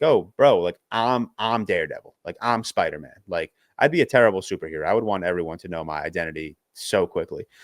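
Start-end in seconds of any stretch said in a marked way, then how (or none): 0.0-3.1 mock boastful, showy show-off tone. Imagining being a vigilante who tells everyone their identity: pretend bragging. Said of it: "I would flex on everyone like".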